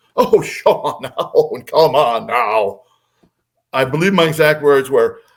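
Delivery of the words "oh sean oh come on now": lofty, slow, haughty talking-down tone. Retelling own past dismissal of Sean: imitating own haughty talking down. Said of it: "with all the haughty, you know, uh, down talking".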